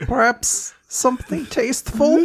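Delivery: crying while speaking. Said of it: "and she's, like, crying".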